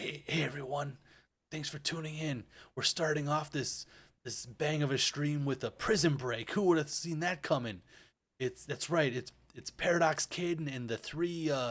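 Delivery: quiet whispering. Voicing a streamer character outside a door: whispering. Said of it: "it's whispering".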